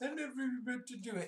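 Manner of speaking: play-acted pathetic, weepy crying voice, high and tearful. Quoting a cornered man's admission, imitating a crying voice. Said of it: "he did it in like a crying voice".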